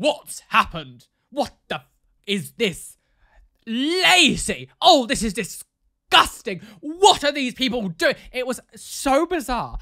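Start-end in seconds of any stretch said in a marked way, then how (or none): 0.0-8.2 loud, slow shouting, one name drawn out. Retelling hearing someone shouting in the living room at night: imitating someone shouting. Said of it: "shouting in the living room".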